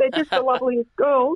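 on the verge of tears. Telling Pete how grateful you are to the women on those teams, teary. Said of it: "I'm teary again".

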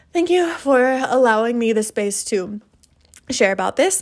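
tearful, crying voice. Speaker thanks listeners after sharing something personal, crying. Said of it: "I'm crying".

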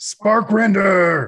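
snarling shout. Voicing Idron calling out to Sparkrender: snarling shout. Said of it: "Idron snarls and shouts".

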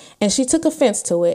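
normal talking voice

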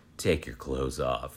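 mock eerie, low, haunting, ghost-like creepy voice. Retelling a story, the speaker voices the woman at the lake, hauntingly and creepily. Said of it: "she very hauntingly and creepily says".

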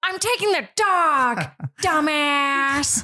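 put-on breathy comedic voice. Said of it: "can you do your Jennifer Coolidge impression?".

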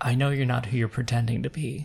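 hushed whisper. Voicing a woman in a narrated scene, whispering to you. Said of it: "And she whispers to you".

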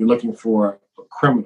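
normal talking voice

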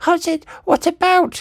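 almost screeching, very high-pitched voice. An old woman repeats her question to a man, almost screeching. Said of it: "she almost screeched".

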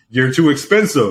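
normal talking voice

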